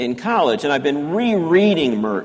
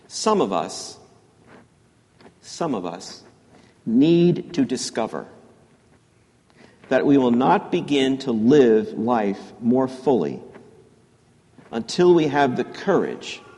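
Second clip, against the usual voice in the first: slow reading, pausing after each phrase. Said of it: "I'm gonna read this slowly".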